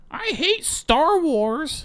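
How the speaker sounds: put-on very high, very slow, loud kid voice. Retelling a kid's comment at the movies: imitating a kid at full volume. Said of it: "full volume goes".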